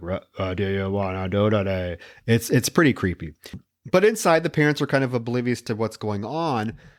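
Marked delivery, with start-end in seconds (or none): 0.0-2.0 mechanical, flat, robotic talking-toy voice. Speaker describing a creepy talking doll in a film, in a robotic doll voice. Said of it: "it's like this robotic".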